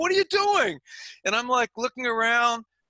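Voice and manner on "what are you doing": play-acted, high, demanding screaming. Retelling a promoter screaming at the referee: imitating someone screaming. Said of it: "the promoter is screaming at me, just screaming".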